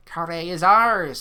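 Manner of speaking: very loud, harsh, guttural roaring scream. A goblin army leader proclaims their conquest as his troops march on the city, screaming in a guttural scream. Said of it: "he screams in his guttural voice".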